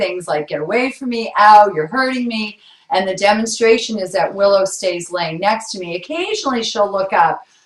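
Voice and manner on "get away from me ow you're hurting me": full-volume, loud, staged screaming cries. Retelling an ambulance demonstration, imitating loud screaming. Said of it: "then I start screaming loudly".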